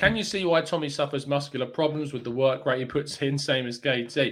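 ordinary delivery

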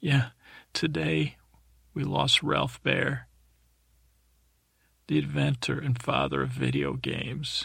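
mock sobbing, pitch swooping up and down. Retelling what a weeping creature said about a loss: imitating someone weeping. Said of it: "creature's weeping, says".

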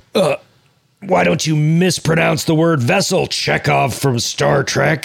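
slow, creaky, rough, drawn-out know-it-all voice. Joking about what a smarter version would say: smart Freddy Krueger voice. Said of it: "smart Freddy would be like".

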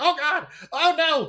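put-on, very high, very loud, drawn-out panicked cries. Retelling running from a giant skeleton boss: imitating panicked self. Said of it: "panicking and running around".

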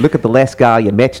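attempted, try-out Australian accent. Asked to try a line in an Australian accent, attempted Australian accent. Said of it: "do it in an Australian accent".

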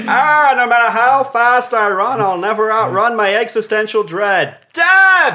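very high, loud, drawn-out musing tone. Imitating Ray saying something deep yet dumb. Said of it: "And Ray's like".

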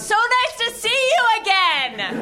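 high, loud screaming carried far. Player character, pretending to have met the jarl before, screams out a greeting. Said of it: "I scream out".

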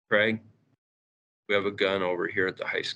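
low, hushed voice. Retelling an assistant principal's phone call to him at school, low voice. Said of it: "in a kind of a low voice".

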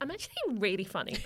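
ironic, sarcastic delivery. Re-enacting telling the guys you're actually really funny, re-enacted sarcastic tone. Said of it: "I'd say in a sarcastic tone. I'd be like".

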